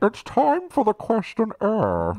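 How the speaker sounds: muffled, cupped, very high, swooping masked villain voice. Taking turns doing impressions with others, speaking in a Bane voice. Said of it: "you got to do a bit of cupping going on".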